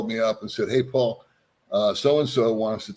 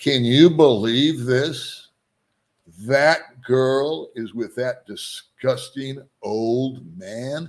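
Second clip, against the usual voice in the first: put-on very slow, drawn-out, loud delivery; 3 semitones higher, 4 dB louder than usual. Retelling what a man sitting across the booth said: imitating a loud remark. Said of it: "very loudly said".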